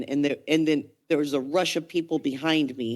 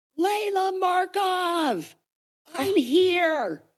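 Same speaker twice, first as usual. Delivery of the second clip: mock very high, stretched-out scream. Retelling searching a movie theater for Layla: retelling a scream.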